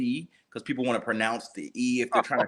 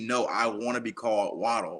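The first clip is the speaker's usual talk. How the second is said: ordinary talk, nothing marked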